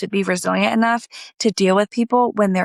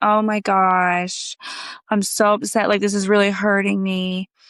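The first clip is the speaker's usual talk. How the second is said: put-on upset crying, slower. Acting out friend B deflecting a confrontation, imitating someone crying, upset. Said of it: "They cry about it".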